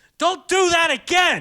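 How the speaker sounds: shrill, very loud, high, drawn-out yell. Retelling how the teacher reacted in class: imitating a teacher yelling. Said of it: "just yelling like that".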